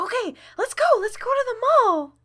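high, eager voice. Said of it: "she's like".

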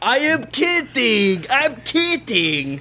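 unsteady character voice. Voicing a hulking man welcoming the players: NPC voice that keeps changing. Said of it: "his voice keeps changing".

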